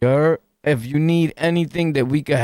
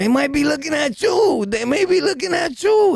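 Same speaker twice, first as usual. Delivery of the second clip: mock very high, shrill, swooping, climbing, insistent raised voice; 12 semitones higher than usual. Retelling a call, imitating Wack 100 raising his voice. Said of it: "raise his voice at me like Whack one hundred is".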